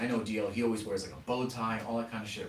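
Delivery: ordinary talk, nothing marked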